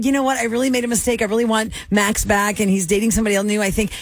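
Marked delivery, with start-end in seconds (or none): none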